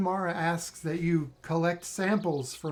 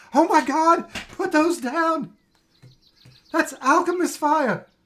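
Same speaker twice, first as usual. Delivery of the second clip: very shrill, very high, very loud panicked shriek; 10 semitones higher, 9 dB louder than usual. A narrator voices a woman as a man juggles her wares, shrieking in panic. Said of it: "And she shrieks".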